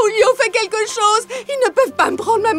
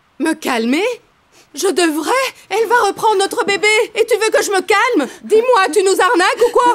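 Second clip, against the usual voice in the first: furious, heated angry outburst. Refusing to calm down as the birth mother takes the baby back: angry outburst.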